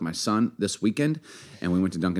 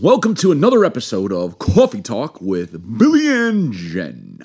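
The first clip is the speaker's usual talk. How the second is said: put-on radio announcer voice, swooping; 4 dB louder than usual. Co-host welcomes listeners in a put-on radio announcer voice. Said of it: "Is that a radio announcer voice? Babe, yeah".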